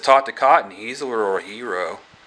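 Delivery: ordinary talk, nothing marked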